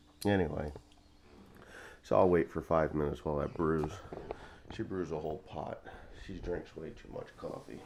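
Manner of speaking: speaking softly. Making coffee early while someone sleeps nearby: talking quietly. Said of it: "I'm talking quiet because I don't wanna wake her up".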